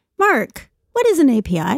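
high, squawking teacher voice. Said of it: "that's what she sounds like".

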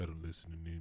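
very quiet, cool, barely audible voice. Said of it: "Prince in his cool ass voice".

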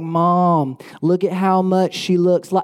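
put-on broad Southern accent, long drawn-out "Mom". Imitating her own voice heard on a video, in a strong Southern accent. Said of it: "the most southern voice you've ever heard".

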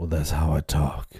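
fake deep voice. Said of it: "Why is your voice so deep?".

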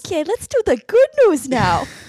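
attempted Midwestern accent. Introducing the good news segment in an attempted midwestern mom accent. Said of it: "what accent were you aiming for?".

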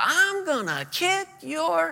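very high, slow, drawn-out scream. Retelling a young man's outburst in the middle of a service: imitating someone screaming. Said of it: "He screams out".

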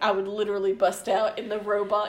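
ordinary talk, nothing marked

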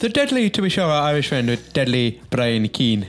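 rough, bad put-on Irish accent. A podcast host introduces this week's guest in a put-on Irish accent. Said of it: "That's my best Irish accent".

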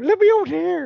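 very high, little leprechaun voice, put-on Irish accent. Pretending to be a leprechaun through a radio in a postbox: little Irish leprechaun accent. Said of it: "Do a little Irish accent and go".

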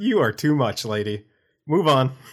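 chuckling, light laugh running through the words. Player speaking in character to another character; laughing a little in character. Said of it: "I laugh in character a little bit".

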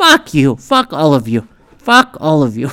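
plain

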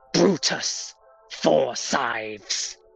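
shrieking in anger. Voicing an unseen figure who shrieks at a failed servant: shrieking in anger. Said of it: "one voice that just shrieks in anger before saying".

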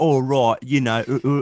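put-on Australian speaker's British accent. Mocking a movie character's accent: Mera's bad British accent. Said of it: "She sounds like an Australian doing a British accent".

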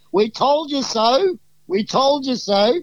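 high, drawn-out hollering yell. Retelling players calling to a knocked-out opponent: imitating yelling out. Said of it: "we're yelling out to him".

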